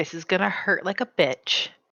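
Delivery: very quiet, hushed, just under the breath. Player voicing Kitty as she holds onto the drumstick near Siren, very quiet. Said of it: "And just very quietly".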